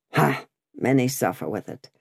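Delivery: ordinary delivery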